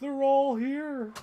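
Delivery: very loud, high, belted out. Retelling finding all the toy pieces, sounding like Don Pardo. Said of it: "I sounded like Don Pardo".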